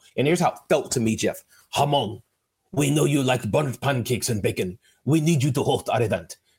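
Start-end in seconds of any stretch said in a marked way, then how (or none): 1.8-6.4 clumsy, bad fake German accent. Speaker voices an email from a big German-based client company: bad German accent. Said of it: "I'm going to say the accent".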